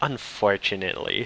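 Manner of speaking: condescending, fed-up, sarcastic tone. Retelling an anime scene, quoting the prince: imitating a fed-up, sarcastic prince. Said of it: "he's fucking done".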